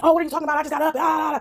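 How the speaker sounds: mock high, heated screaming and yelling. Retelling how the person in the house answered: imitating someone screaming and yelling. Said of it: "this person starts screaming and yelling".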